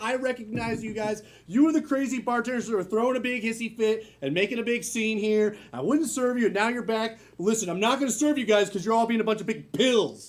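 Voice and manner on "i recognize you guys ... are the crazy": plain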